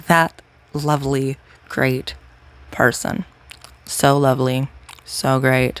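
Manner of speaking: sarcastic, mocking tone. Describing someone who says horrible things: sarcastic praise. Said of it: "This is sarcasm".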